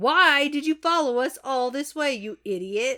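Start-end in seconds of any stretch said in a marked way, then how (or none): none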